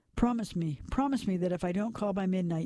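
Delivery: plain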